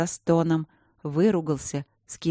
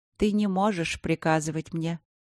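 ordinary delivery

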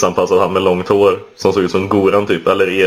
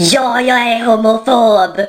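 put-on shrill, very high, stretched-out yell. Retelling her outburst after storming into the apartment; imitating Asva screaming. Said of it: "klampade hon in i lägenheten och skrek".

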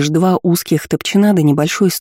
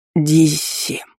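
trembling, shaky, quavering voice. A man who has just come to calls out to the woman, in a trembling voice. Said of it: "Дрожащим голосом позвал".

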